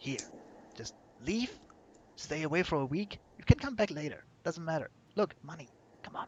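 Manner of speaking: speaking very quietly, very hushed. In a game, a player's character hands two gold to the Temmie: speaking very quietly. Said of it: "very quietly say".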